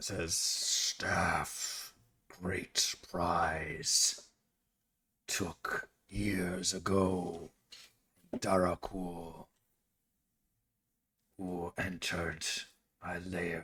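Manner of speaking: very quiet, hushed, growled monster voice. Voicing a creature answering about the staff, growling creature voice. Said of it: "he growls again".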